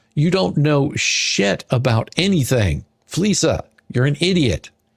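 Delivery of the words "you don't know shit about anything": plain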